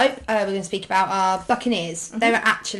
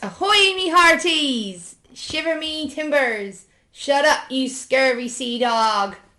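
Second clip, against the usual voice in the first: stock pirate talk, raised pitch; 5 semitones higher than usual. Host opening a podcast episode about pirates, in a pirate voice. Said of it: "I spoke like a pirate".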